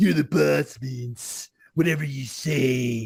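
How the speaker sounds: low, deep, deliberate slow drawl, say stretched out. Imitating a wrestler answering the company boss: Triple H impression. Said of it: "let me do my Triple H".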